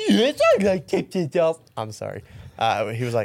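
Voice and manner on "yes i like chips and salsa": very high, loud, wobbly, swooping cartoon dog voice. Retelling what the other speaker said on a call: Scooby-Doo voice.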